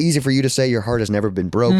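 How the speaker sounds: ordinary delivery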